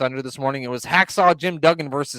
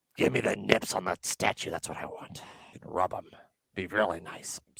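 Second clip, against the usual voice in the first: creepy, breathy whisper; 7 semitones lower, 10 dB quieter than usual. Talking about a statue, slipping into a creepy Vince voice. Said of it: "You really slipped into Vince there as you went all creepy".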